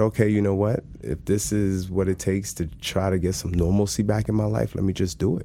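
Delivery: ordinary talk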